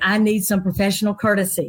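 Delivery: ordinary delivery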